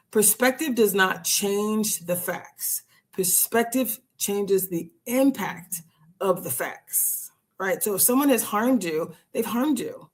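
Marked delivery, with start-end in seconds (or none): 0.2-7.3 slow, deliberate, each word weighed and drawn out. Stressing a point to listeners, speaking slowly. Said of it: "I just want to say this slowly".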